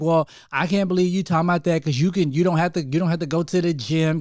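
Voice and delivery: plain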